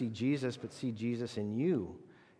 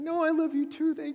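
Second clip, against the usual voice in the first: mock-embarrassed voice, much higher; 5 dB louder than usual. Recalling how his girlfriend reacted to his teasing, imitating her embarrassed reply. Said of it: "And she got all embarrassed".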